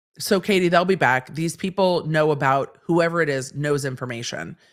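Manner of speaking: normal talking voice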